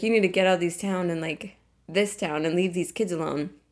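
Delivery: normal talking voice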